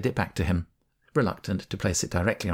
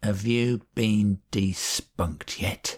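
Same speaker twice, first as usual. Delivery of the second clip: put-on intense drunken voice, each word carefully enunciated. A drunk man fixes his eyes on the narrator and asks, drunken, carefully enunciated. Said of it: "with a drunken intensity, he enunciated carefully".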